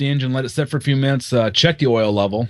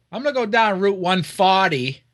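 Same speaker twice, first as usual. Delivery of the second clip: put-on mimicked pronunciation, much higher; 8 semitones higher than usual. Teasing the other speaker about how they say it, mimicking the other's pronunciation. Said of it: "That's not the way you say it. ... You go".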